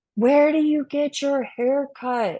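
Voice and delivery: mock high yell. Retelling a woman calling out across a restaurant: imitating someone yelling. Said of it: "yelling at me across the restaurant".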